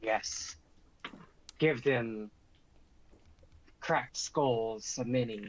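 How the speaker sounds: put-on lizard-like creature voice, hissing accent. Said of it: "I'm trying to speak like a, uh, lizard".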